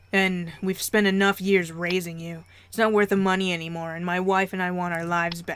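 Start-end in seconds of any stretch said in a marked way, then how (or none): none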